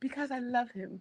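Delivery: soft, hushed, softened, very high voice. Repeating another speaker's line to point out its softness: imitating a soft voice. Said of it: "Did you see the softness that just came".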